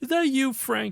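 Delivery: put-on very high-pitched New York accent. Retelling how a guard answers the phone, imitating a New York accent. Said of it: "I don't know if it's New York is the right term".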